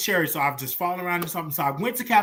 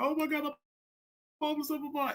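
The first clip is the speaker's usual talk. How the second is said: high, quick, hushed, tearful crying with spilling words; 9 semitones higher, 8 dB quieter than usual. Retelling a phone call made while upset, retelling own crying. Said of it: "I was just crying".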